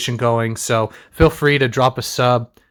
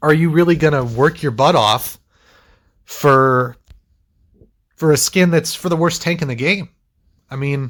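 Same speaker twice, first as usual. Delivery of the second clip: sudden high voice crack breaking mid-phrase; 3 semitones higher than usual. A content creator talks to viewers about a ranked skin, voice cracking. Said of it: "a little voice crack there".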